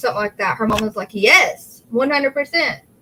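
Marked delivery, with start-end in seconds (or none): 1.1-2.8 defensive, insistent voice rising high in pitch. Retelling a mother's answer in an interview: imitating a defensive high-pitched voice. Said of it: "got really defensive and her voice went up high".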